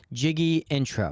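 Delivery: ordinary talk, nothing marked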